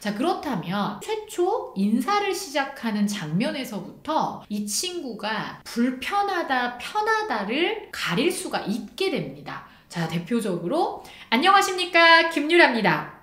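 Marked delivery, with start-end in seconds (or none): 11.3-13.0 overdone, excessive delivery, loud and high. Showing an uncomfortable example of a self-introduction, an overdone, excessive greeting. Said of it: "이렇게 불편한 느낌으로 과해지지 않도록".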